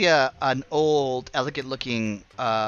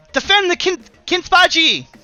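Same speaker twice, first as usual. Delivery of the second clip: put-on little goblin boy voice, much higher and louder; 9 dB louder than usual. Storyteller voices a little boy goblin calling out in the scene, little boy goblin voice. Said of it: "a little boy goblin".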